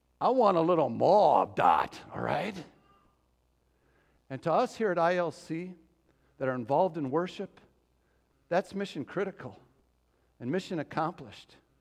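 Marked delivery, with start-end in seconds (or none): 0.2-2.0 strong South Philly accent. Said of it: "in your best South Philly accent".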